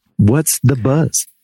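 close, hushed ASMR delivery. Asking a guest to start the segment, sounding like ASMR. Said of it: "sounded like A S M R".

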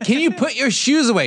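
high-pitched put-on yell. Retelling how the wife yells out to no one: imitating wife yelling. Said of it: "my wife when she'll just yell in the middle".

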